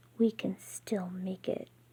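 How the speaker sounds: words forced out in a hiss. Narrating an escape scene, voicing a woman's line, hissing. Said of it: "she hisses".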